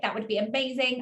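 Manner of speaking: ordinary talk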